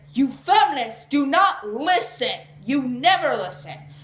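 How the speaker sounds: heated angry rant. Arguing against feminists who do not listen: raised angry voice. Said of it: "I'm raising my tone".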